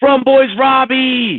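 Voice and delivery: very high-pitched yell in unison. Retelling fans rushing out of a car: imitating fans yelling. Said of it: "Like, yelling".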